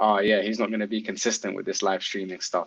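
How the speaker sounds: usual speaking voice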